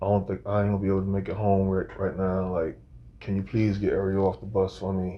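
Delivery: soft, acted mournful, downcast pleading tone. Retelling a voicemail left for his girlfriend: imitating his own sad voice. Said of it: "I'm trying to say this real sad".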